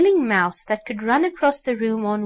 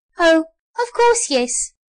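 high, squeaky little doll voice; 7 semitones higher, 4 dB louder than usual. Reading a story, the new sawdust doll answers the others; squeaking. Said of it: "squeaked the new sawdust doll".

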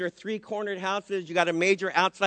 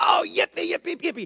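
put-on very high, thrilled cheering; 10 semitones higher than usual. Telling the story, Rose hears Peter at the door: imitating Rose's excited cries. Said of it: "And she gets so excited".

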